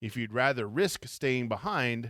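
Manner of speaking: plain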